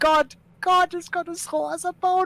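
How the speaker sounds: very high, insane laughter through the words. Playing a character walking away and repeating a line, laughing maniacally. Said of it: "He laughs almost maniacally as he walks away".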